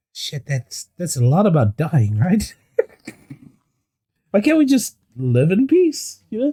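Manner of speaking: side whisper. Whispering in character to a companion with an orc in front: side whisper. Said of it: "side whisper to".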